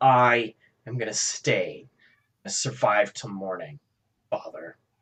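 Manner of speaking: words dripping with venom. A woman at the listener's side answers her father, with venom in her voice. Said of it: "with venom in her voice".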